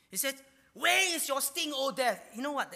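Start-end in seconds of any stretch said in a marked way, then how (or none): 0.8-2.3 loud, high sarcastic tone. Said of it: "That was a sarcastic remark".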